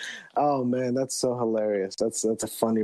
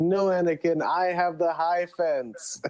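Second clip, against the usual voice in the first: high-pitched, calling shout; 7 semitones higher than usual. Pitching a meme, speaker acts out Obi-Wan Kenobi shouting down to Anakin. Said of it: "he shouts down to Anakin".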